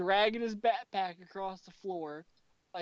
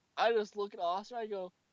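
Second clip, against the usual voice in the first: usual speaking voice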